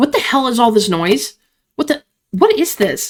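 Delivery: shocked, startled, confused outburst, stumbling over words. Belladonna, usually cold and venomous, reacts to the scene: Belladonna, frightened. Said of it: "[name], who's always cold, always venomous, / her usual sneer is gone. [name], who's always cold, always venomous, now stands frozen, face twisted in real fear. / [name]'s eyes widen. She raises a kit".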